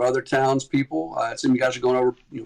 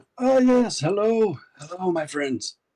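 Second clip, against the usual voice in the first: warm, welcoming voice, pitched up a touch; 6 semitones higher than usual. Voicing Father Lucian greeting the arriving party: voicing Father Lucian. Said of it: "Father, uh, Lucian is, uh, there".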